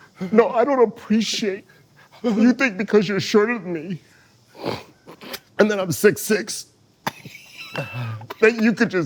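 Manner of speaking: acted tearful voice. Acting out a tearful complaint after being told to quiver the lip: fake crying. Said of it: "He got the eye juice".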